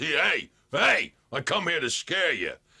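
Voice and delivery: big, huge monster voice. Speaker demonstrating a character he voices, in Bugaboo monster voice. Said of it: "And he sounds like this".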